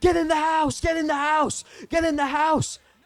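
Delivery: very high, very loud, shrill yelling. Retelling how the parents yelled from the front lawn: imitating parents yelling. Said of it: "they're yelling at her".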